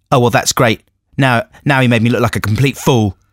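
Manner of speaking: normal talking voice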